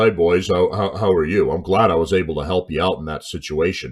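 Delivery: voice pushed down very low. Retelling meeting a person in a bar who greeted the speaker's group, imitating a very low voice. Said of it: "talking in a very low".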